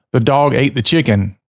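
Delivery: plain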